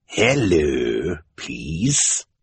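raspy villain voice with hello drawn out. Narrator reading the story as the villain greets the orphans, Count Olaf's raspy voice. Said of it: "Count Olaf said in his raspy voice".

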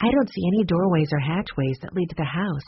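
plain

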